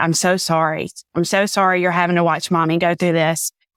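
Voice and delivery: tearful, crying voice. Retelling apologizing to a crying daughter: retelling own crying apology. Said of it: "I'm crying, looking at my daughter saying".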